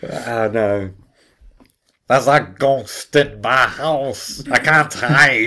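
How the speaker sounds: high, loud, drawn-out character voice. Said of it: "That's how you do it next week".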